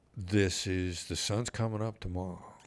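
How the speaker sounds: gentle, calm, soothing, reassuring tone. Retelling what was said to people who had not come out yet: imitating his own soothing voice. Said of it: "a soothing".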